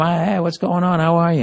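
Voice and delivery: put-on charming voice. Retelling greeting the deli lady, acting out a charming greeting. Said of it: "I'm fucking turning on the charm".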